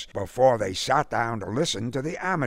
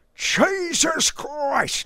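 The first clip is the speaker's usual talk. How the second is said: sudden cry, very high pitched; 3 dB louder than usual. Roquefort flings open the door on Buckhammer, crying out. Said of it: "Cried Mr".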